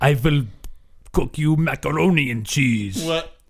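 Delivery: phony, badly done fake Russian accent. Repeating another speaker's failed attempt at a voice, in a bad russian accent. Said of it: "That's not Russian at all".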